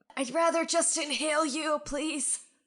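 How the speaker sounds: high, wheezy, short-of-breath character voice. Offered an inhaler, an asthmatic character answers in a wheezing voice. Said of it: "it kind of wheezes".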